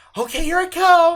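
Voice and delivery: mock eager shout, very high and loud. Retelling how she answered when called to come look, mimicking eager excitement. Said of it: "she's all excited".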